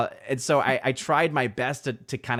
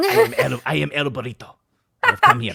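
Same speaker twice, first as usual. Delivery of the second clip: loud, swooping, booming put-on Spanish accent; 3 semitones higher, 7 dB louder than usual. Voicing the swaddled baby Thor as El Burrito: El Burrito voice. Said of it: "it started off very much like El Burrito".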